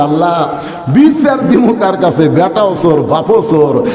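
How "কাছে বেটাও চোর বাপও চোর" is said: normal talking voice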